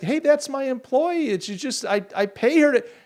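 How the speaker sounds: mock very high yell. Retelling the pizza store owner yelling at police, retelling a man yelling in protest. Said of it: "he's yelling to him like".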